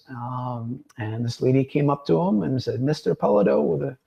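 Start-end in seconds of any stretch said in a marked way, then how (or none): 2.8-3.6 put-on heavy, thick Anglo accent with raised pitch. Retelling a longtime team fan greeting him, in her big anglo accent. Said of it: "with her big accent, you know, Anglo accent".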